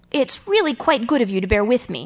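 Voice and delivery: plain reading voice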